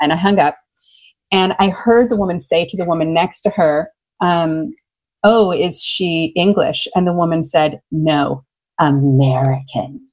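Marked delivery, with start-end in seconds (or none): 7.9-9.9 low, mock scornful, contemptuous tone. Retelling a nail salon woman's overheard reply, imitating deep disdain. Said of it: "like with the most deep disdain".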